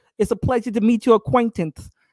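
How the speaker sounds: put-on celebrity voice with a lisp. Retelling how a brother answered being called Mike Tyson, in Mike Tyson lisping voice. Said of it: "He made this voice... you know he has that lisp".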